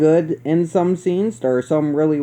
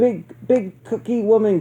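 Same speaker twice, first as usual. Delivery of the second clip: put-on high child voice, stuttering on "big"; 5 semitones higher than usual. Retelling a movie scene, quoting the little kid's line: slight stutter. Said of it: "because he stutters a little bit".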